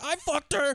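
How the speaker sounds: mock panicking, high frantic blurt, voice shooting way up. Retelling a movie scene where a character is freaking out: imitating someone freaking out. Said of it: "freaking out".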